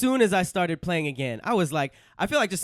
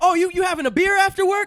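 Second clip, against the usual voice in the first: mock yelling motivational speaker, higher and louder; 14 semitones higher, 7 dB louder than usual. Mocking productivity speakers who scream at people: imitating Gary Vee screaming. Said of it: "screaming at us like".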